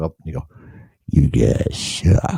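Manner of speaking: put-on very drawn-out, slow, low drunken voice. Imagining a drunk guy in a live studio audience heckling: imitating a drunk heckler. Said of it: "some drunk guy will be like".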